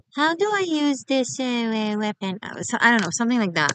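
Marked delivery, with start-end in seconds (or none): 0.2-2.4 slow, high-pitched, extra sarcastic, fumbling put-on voice. Acting out a squirt who comes along during battle: imitating someone sarcastically. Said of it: "Sorry for being extra sarcastic".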